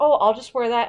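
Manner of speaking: plain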